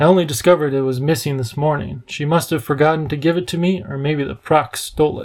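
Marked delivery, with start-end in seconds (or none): none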